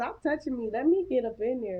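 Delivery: normal talking voice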